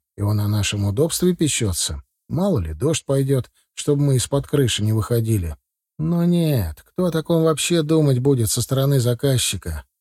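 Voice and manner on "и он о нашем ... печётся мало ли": usual speaking voice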